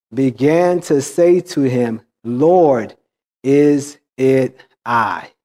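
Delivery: very slow, drawn-out, deliberate reading. Reading a passage with verse numbers aloud, very slow. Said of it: "now I'm going to read this very slow".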